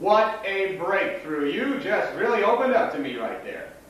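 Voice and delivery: very high, slow, drawling, dripping sarcasm. Answering a companion's remark about where they come from: sarcastic. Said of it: "You're sounding funny".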